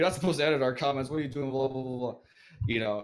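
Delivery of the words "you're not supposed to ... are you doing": higher, fast, loud angry yell. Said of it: "people would come and yell at me".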